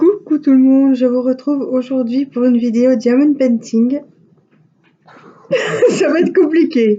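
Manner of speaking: high, loud, giggly, fighting off laughter. Opening a diamond painting video while in a fit of giggles. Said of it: "je suis prise d'un fou rire".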